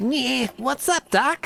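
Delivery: very high, bad cartoon rabbit voice. Spotting a big carrot, the speaker does a terrible Bugs Bunny impression. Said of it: "that was a terrible Bugs Bunny impression".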